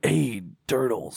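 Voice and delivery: squeaky cartoon rat voice. Trading character voices with another speaker, Splinter voice.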